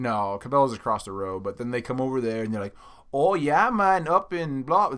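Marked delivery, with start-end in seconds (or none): 3.1-5.0 put-on loose Jamaican accent, raised and slow. Quoting shoppers who come over from the mall, kind of Jamaican accent. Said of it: "I sounded kind of Jamaican".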